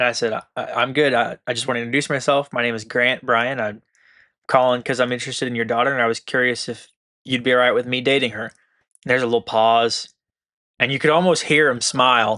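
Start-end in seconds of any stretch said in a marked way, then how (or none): none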